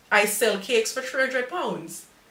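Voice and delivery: ordinary talk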